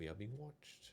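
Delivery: hushed, quiet half-whisper. Voicing a wizard warning the party they are watched: half-whispering. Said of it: "She whispers in your general vicinity".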